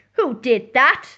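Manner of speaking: cross, annoyed, put-out tone. Narrator reading a story, voicing the squirrel after it falls out of bed: cross. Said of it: "asked the squirrel crossly".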